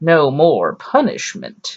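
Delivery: put-on hammy, every syllable hammered, swooping, over-accentuated. Imitating an actor's awful line reading, every syllable accentuated. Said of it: "Eric Fre-, Freeman goes".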